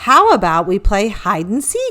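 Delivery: ordinary delivery, nothing marked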